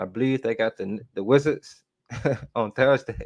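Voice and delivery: talking with words spilling through laughter. Previewing the team's next game for viewers, laughing while talking. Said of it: "Sorry, I'm laughing".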